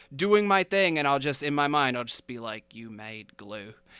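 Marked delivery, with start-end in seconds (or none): 2.8-3.8 very quiet, hushed, badly done Australian accent. Repeating a character's line in your head at work, bad australian accent. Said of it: "in my really bad attempt at an Australian accent".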